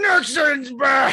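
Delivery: very high, loud shout. Retelling your one-line bit where he comes out of the bathroom after throwing up, Nixon impression. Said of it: "if Nixon threw up and he comes out of the bathroom, he goes".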